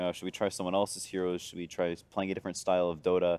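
ordinary delivery

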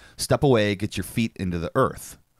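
usual speaking voice

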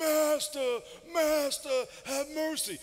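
very slow, high, damaged-sounding voice. Speaker acting out the ten lepers calling to the Master, put-on leper voice with vocal nodules. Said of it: "your vocal cords would get nodules, and you talk like that".

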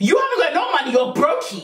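mock yelling at top volume. Retelling a phone call about a crashed car: retelling own screaming. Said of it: "I'm screaming, top of my lungs, losing it".

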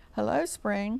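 hushed, soft-spoken, quiet voice. A rabbit sits by a stream and greets something growing; quiet. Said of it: "he said quietly".

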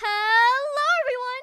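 comic goofy screaming. Trying out voice takes, speaker does a goofy scream. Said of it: "let me try a goofy scream take".

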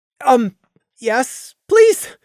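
small, high, squeaky voice. Reading a man confirming he is asking a woman on a date, squeaking. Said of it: "Randy squeaked".

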